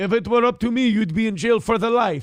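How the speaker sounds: imitated Romanian accent, high. Rereading a viewer's message aloud: imitating a romanian immigrant accent. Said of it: "Why did you say that like a Romanian immigrant?".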